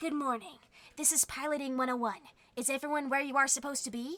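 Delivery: computer text-to-speech read-aloud bot voice. Retelling being told they sound like a chat voice: Twitch text-to-speech voice. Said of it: "the one that sounds like".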